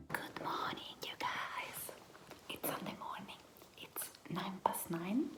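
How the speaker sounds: whispered softly. Greeting viewers on a Sunday morning while someone sleeps nearby, whispering. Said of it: "I'm whispering again".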